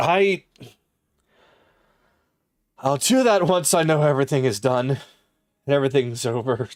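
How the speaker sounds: composed, steady voice, holding back emotion. Voicing the mother answering her son, forcing herself to stay strong. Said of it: "forcing herself to stay strong".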